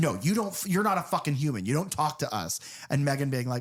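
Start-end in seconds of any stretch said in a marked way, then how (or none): 0.0-2.6 play-acted, enraged, super pissed furious outburst. Retelling Gemma turning on Megan super pissed: imitating super pissed Gemma. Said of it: "super pissed and like".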